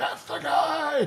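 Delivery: very high, very loud yelled outburst. Imagining store staff recognizing him: Doc Brown voice. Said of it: "went into my Doc Brown, uh, Christopher Lloyd".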